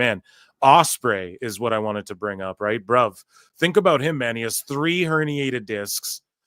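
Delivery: ordinary delivery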